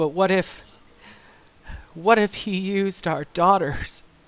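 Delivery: put-on near-tearful tone. Retelling what a woman said to her husband; retelling a near-tearful plea. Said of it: "she begins to cry".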